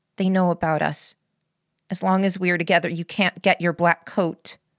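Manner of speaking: ordinary delivery, nothing marked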